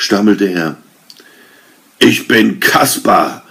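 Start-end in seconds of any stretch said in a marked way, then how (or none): 2.0-3.3 grand, thunderous, thundering voice, pitched high. Narrator reads Kaspar answering Arne's question: thundering. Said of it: "donnerte es zurück".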